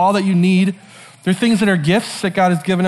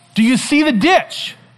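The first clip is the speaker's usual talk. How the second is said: high, shouted delivery, acted; 7 semitones higher than usual. Retelling riding a mini bike while dad calls out: imitating dad yelling. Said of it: "Dad yells".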